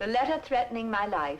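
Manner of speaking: ordinary delivery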